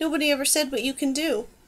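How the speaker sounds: plain reading voice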